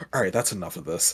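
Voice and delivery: muttering under breath. Narrating an annoyed character's aside before his last shot, muttered under his breath. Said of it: "he mutters under his breath".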